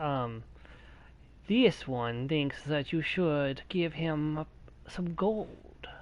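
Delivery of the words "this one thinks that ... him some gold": slow-spoken cat-creature character voice. Speaker trying out creature voices, Khajiit voice. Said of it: "I could probably get away with the Khajiit voice".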